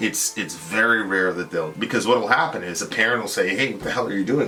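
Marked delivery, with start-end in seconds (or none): none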